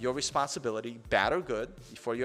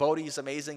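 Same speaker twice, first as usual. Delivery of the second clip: ordinary talk, nothing marked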